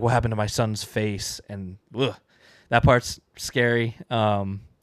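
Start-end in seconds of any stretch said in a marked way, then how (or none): none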